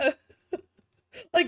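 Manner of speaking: giggling and laughing through the words.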